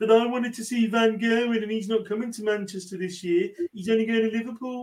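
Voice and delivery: Birmingham accent. On a podcast, a speaker talks about who is coming to Manchester, Brummie accent. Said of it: "In a Brummie accent".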